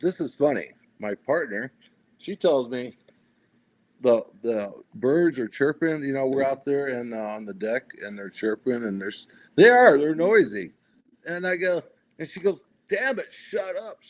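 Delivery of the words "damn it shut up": put-on sudden, high, shrill yelled outburst. Retelling how the partner yelled at chirping birds: imitating someone yelling. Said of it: "she yells".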